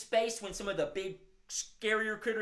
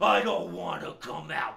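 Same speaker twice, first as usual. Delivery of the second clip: put-on grumpy bear voice, louder; 6 dB louder than usual. Voicing a bear called out by the kids: grumpy bear voice. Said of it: "you seem like you're feeling really grumpy today".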